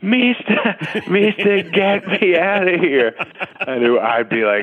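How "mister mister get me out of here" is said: put-on very high, drawn-out elderly woman scream. Retelling what an older woman in a nursing home would scream: imitating an old woman screaming. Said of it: "she would scream at me".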